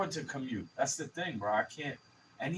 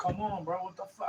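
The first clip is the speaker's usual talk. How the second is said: mock thick, worked-up New York accent, pitched up; 5 semitones higher than usual. Showing own manner when angry, acting out a thick new york accent. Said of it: "I get all New Yorkish".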